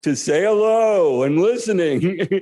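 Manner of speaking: big, booming, put-on jolly voice. Retelling a phone call to Gurudev, staying in character: big booming Santa Claus voice. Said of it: "Santa Claus voice all morning".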